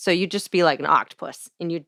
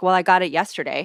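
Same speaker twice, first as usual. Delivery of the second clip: put-on grumpy customer voice. Retelling a grumpy customer demanding takeout: imitating grumpy Matt Besser. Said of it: "he was always kinda grumpy".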